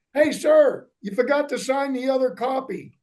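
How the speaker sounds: high-pitched, called-out shout. Retelling how the sergeant major yelled back across the street: imitating someone yelling. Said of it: "he yells back across the street".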